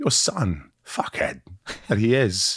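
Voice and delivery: subtle, slow, swooping, swinging delivery. Showing the right way to do a Christopher Walken impression: subtle Christopher Walken impression. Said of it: "Walken's very subtle".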